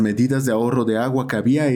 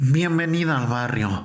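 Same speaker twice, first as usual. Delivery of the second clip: voice thick and clogged with phlegm. Reading a new neighbor's welcome in a story: thick phlegmy voice. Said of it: "dijo con voz gruesa y flemática".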